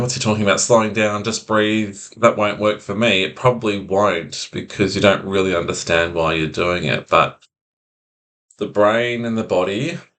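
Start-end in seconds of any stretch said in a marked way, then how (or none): none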